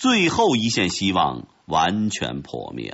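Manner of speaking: ordinary delivery, nothing marked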